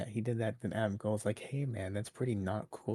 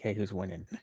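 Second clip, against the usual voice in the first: put-on enthusiastic tone. Retelling a phone call to Tony Khan, imitating an enthusiastic tone. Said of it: "With a very enthusiastic tone".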